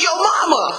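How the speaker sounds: taunting, mocking shout.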